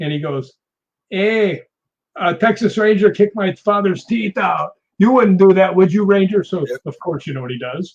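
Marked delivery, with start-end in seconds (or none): 1.1-6.4 thick, played-up, exaggerated Spanish accent.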